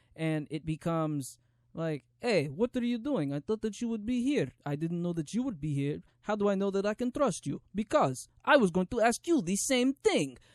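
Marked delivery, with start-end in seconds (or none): 2.2-10.3 clichéd, pitched-up put-on movie Russian accent. Imitating clichéd movie dialogue from the trailer: russian accent. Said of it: "put a Russian accent over everything".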